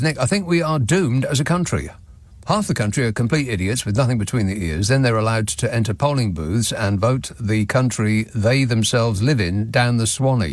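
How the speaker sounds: plain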